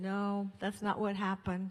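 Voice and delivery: ordinary talk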